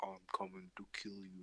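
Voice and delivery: soft, very deep voice like a voice changer. Recalling players acting as Jason in a game, deep Jason voice. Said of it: "turned on like a deep voice voice changer".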